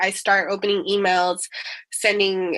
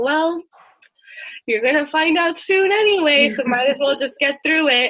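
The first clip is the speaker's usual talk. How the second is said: mock high, offhand, very nonchalant mother's voice; 6 semitones higher than usual. Speaker quoting their mom's response to hard times, imitating mom, nonchalant. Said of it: "in a very nonchalant manner".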